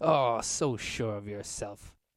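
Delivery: laughing while talking in a character voice. Voicing an elf leader who laughs at a challenger: laughing while talking in character. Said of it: "He laughs".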